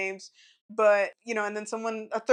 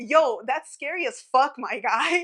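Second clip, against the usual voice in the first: acted-out scream; 4 semitones higher than usual. Telling Dylan about slamming his cabin door on a man, retelling a scream. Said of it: "And then I screamed".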